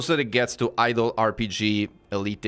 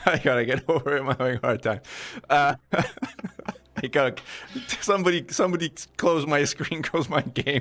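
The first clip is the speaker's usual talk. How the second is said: talking while laughing, cracking up mid-sentence; 4 semitones higher than usual. Speaker still cracking up over their game, asks someone to close it; laughing while talking. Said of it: "I'm still cracking up".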